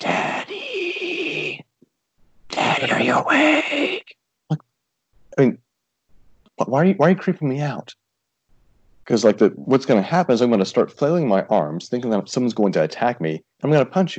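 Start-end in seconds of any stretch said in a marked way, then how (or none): 0.0-4.2 put-on weird creepy toddler voice, much higher, slower. Father recalling his kids sneaking up next to him in the room, weird creepy toddler voice. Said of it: "creepy toddler voice".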